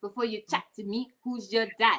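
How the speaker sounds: put-on Latin American Spanish accent. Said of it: "You gotta put the accent on it".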